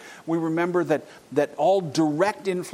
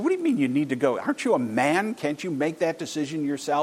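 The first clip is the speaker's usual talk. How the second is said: mock salesman voice, jeering and scornful. Retelling what a salesman said to a hesitant man, retelling a mocking remark. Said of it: "the salesman mocked him".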